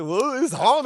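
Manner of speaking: fake blubbering, ugly-crying voice. Retelling crying to the landlord over late rent: mock ugly crying. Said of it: "just for your ugly cry".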